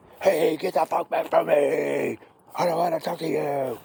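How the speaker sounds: unsettling, freaky put-on dog voice. Explaining dog corrections, voicing a dog that wants space, freaky put-on dog voice. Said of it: "Did I freak you out with that voice".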